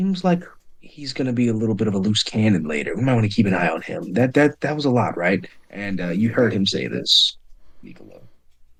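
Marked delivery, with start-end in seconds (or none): 0.0-4.1 whisper in a much lower voice. In a tabletop game, voicing Cade as he leans over to Tiram: whispering. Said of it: "Cade whispers over to Tiram".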